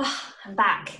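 breathless, winded, puffing, out of breath. Returning after running to grab her finished sweater, out of breath. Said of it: "Out of breath".

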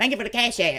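mocking, parroting tone. Speaker quotes Sam in a mocking imitation, mocking Sam. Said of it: "I'm mocking Sam".

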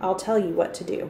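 ordinary delivery

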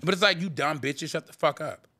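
plain

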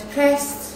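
deliberate heavy emphasis on depressed. Sending a birthday greeting video message: stress on depressed. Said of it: "very deliberate on the word depressed".

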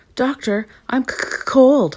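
stuttering, catching on words, slightly high-pitched voice. Narrator reads Nyssa, trapped in a freezer, speaking to the doctor, stuttering. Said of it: "stuttered Nyssa".

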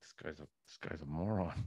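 muttered under breath. Imagining sitting beside a friend at the game, muttering under breath. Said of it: "under my breath".

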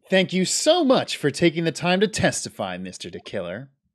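mocking, sarcastic tone. Voicing a character thanking a witness for testifying: sarcastic. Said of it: "was that sarcasm?".

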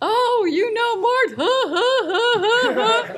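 very high, slow speech with laughter. Retelling passing on a hello to Clyde: Clyde Frazier impression. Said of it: "I just have to do this imitation of Clyde".

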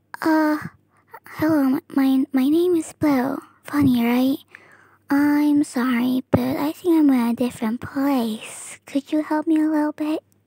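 gentle, soft-spoken voice. Trying out different voices in public, now introducing a character in soft voice. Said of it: "soft voice".

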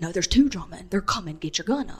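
loud stage whisper. Telling a story and quoting what he said, in a loud whisper. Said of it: "in a loud whisper".

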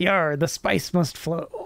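put-on pirate voice. Joking that a Dune-like book is written in pirate speech: pirate speech. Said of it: "everything's in pirate speech".

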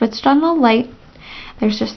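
plain

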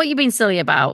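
normal talking voice

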